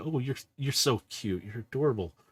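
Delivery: words broken up by giggles and laughter. Voicing Kiara cooing over a creature, giggling. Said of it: "you can hear Kiara kinda giggling".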